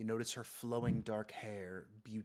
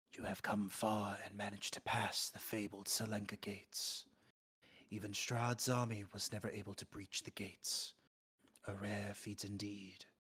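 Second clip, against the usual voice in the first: hushed, whispered voice. Narrating a scene, a cloaked woman at the window speaks to the listener: whispering. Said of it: "her voice whispers to you".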